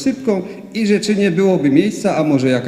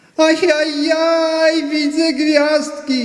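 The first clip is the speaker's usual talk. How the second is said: very high groaning moan, "ajajaj" stretched out long; 11 semitones higher than usual. Grandpa calls out from the ottoman, moaning. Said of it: "jęczał dziadek z otomany".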